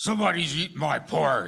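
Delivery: very growly, put-on growling bear voice. Asked to play Papa Bear finding someone ate his porridge, in a growly Papa Bear voice. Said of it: "In your growliest Papa Bear voice".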